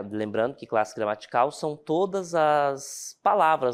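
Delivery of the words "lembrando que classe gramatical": ordinary delivery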